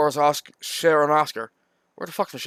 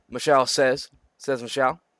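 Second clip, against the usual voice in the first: usual speaking voice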